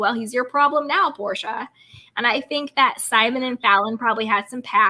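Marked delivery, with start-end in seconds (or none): none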